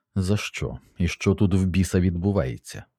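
plain

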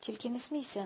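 ordinary delivery, nothing marked

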